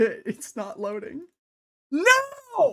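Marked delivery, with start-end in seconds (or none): 1.9-2.7 very high, swooping yell, long drawn "no". Talking with another person during a game, yelling. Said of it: "I'm just yelling at n-".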